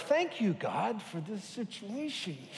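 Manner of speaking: soft, mock, very heavily sarcastic tone. Recalling a prayer to god, the speaker retells it, very sarcastic. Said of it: "this very sarcastic prayer of".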